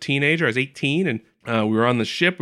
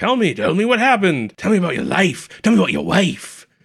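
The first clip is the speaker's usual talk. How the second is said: pitched-up, prodding voice, raised a notch; 6 semitones higher than usual. Retelling a scene from a show, doing a best Sisko impression. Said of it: "that's my best Sisko".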